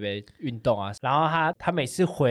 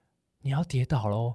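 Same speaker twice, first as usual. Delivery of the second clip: acted-out soft whisper. Retelling how the speaker whispered into a man's ear to test his hearing, whispering. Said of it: "然后在他耳边小声说。".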